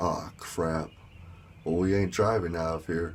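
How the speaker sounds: normal talking voice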